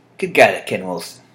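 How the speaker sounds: normal talking voice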